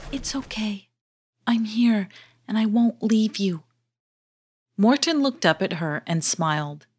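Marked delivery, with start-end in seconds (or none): 0.1-3.6 close, hushed whisper. Lazy Leva leans down to Morton's ear, whispering. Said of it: "She leaned down and whispered in Morton's ear".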